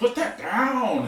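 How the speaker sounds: very high, plain, barked yell. Game master voicing a man yelling at a player who picked up a baton, yelling. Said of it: "he's yelling at you plainly like".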